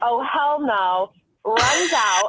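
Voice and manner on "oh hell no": put-on quick, mild yelled outcry. Retelling how an aide ran in and saw the scene: imitating an aide yelling.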